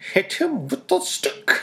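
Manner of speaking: very high character voice, pitched way up. Holding a hand up, the speaker does their best Yzma impression. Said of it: "doing my best Yzma impression".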